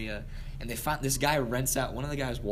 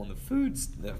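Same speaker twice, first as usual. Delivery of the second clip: voice cracking and breaking on the words; 2 semitones lower than usual. Describing a crowded bunk room when the voice cracks. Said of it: "Voice crack".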